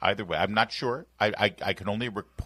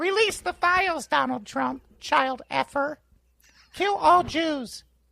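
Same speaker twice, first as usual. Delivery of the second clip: very high-pitched puppet voice; 4 dB louder than usual. Asked to do the voice, the speaker performs an Elmo voice. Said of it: "the fact that you use the voice".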